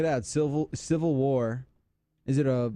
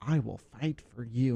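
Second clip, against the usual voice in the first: mock slimy, mousy lawyer voice; 3 dB quieter than usual. Retelling a local lawyer's tv commercial line, imitating a slimy mousy lawyer. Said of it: "this mousy guy".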